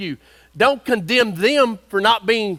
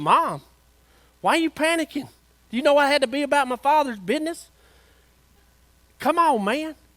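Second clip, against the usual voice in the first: put-on high-pitched voice of a thirteen-year-old boy; 5 semitones higher, 3 dB quieter than usual. Retelling what Jesus said to his mother: Jesus as a thirteen-year-old kid. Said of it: "But Jesus was a thirteen-year-old kid".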